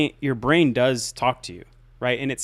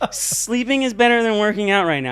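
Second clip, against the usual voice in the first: put-on whiny little-kid voice, pitched higher, like a baby; 9 semitones higher, 4 dB louder than usual. Showing how you might say it over and over, in a whiny little-kid voice. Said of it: "say it over and over again like a little whiny baby".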